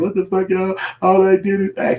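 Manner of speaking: high, put-on, losing-it, freaking-out outburst. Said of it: "she all tweaking and shit like".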